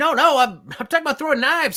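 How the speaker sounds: mock yelling. Describing another player's character talking to a barkeep, retelling a yell. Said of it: "you're kind of like yelling like".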